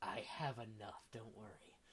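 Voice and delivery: very quiet, low, hushed half-whisper. During a role-played haggle, a character speaks aside to his friend: half-whispering. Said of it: "Andrew says as he whispers to his friend".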